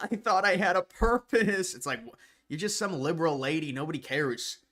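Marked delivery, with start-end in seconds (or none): 0.0-1.7 high, drawn-out, sobbing crying voice. Retelling what Joy Reid said on air: imitating Joy Reid crying. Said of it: "she's crying like".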